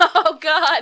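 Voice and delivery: helpless, high, loud laughing fit.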